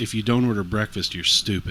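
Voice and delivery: ordinary talk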